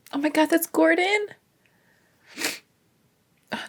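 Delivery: high, tearful speech, talking through crying. Reacting as gordon appears, already in tears, crying while talking. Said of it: "now I have something in my eye on top of crying".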